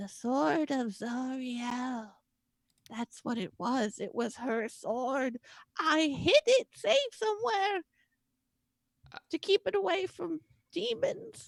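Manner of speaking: very quiet, barely voiced, one word drawn out. A game master voices Lulu answering the group, Lulu speaking very quietly. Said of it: "she very quietly is like".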